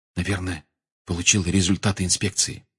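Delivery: soft, hushed half-whisper. Narrator reads a character leaning toward another to speak, half-whispered. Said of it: "он наклонился к Рону и прошептал".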